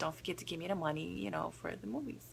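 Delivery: very quiet half-whisper, barely under the breath. Recounting a moment with him at the register: retelling a half-whisper. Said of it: "I whispered to him".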